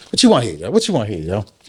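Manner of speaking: play-acted fed-up, annoyed, repeated snap. Retelling own words to a visitor while frustrated: imitating own frustrated outburst. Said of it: "So I was frustrated".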